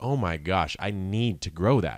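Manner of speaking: plain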